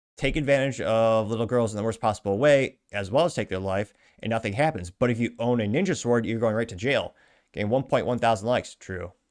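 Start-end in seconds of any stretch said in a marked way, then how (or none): none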